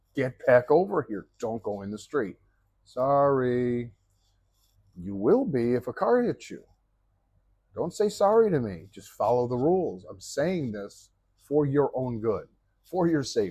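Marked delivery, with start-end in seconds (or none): 0.2-2.4 acted-out shouting, faster. Speaker retells calling out to a boy on a scooter who crossed the street: retelling a yell at a kid. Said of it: "I'm yelling at him now".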